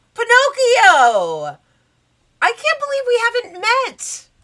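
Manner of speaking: delighted gushing, drawn out high and loud. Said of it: "then turns and goes".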